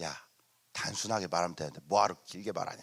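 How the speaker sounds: low, quiet, sneering, cackling demon voice.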